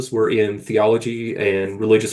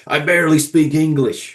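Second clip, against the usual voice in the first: put-on Bronx accent, higher and slower; 4 semitones higher than usual. Retelling Don DeLillo's answer when someone asked him a question, in Don DeLillo's Bronx accent. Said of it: "he says in his Bronx ac- accent".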